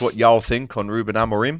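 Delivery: ordinary talk, nothing marked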